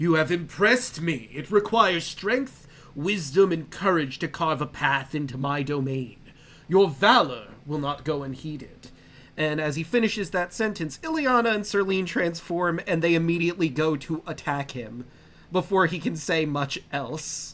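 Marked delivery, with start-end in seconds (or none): 0.0-8.9 grand, declaiming delivery like a ruling power. Game master voicing Sidon as he turns to face the players, booming Sidon voice. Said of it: "His voice booms out".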